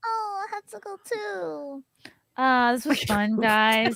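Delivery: put-on anime voice, high, slow and very drawn out. Saying goodbye to the others at the end: put-on anime voice. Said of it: "Was that [name]'s anime voice?".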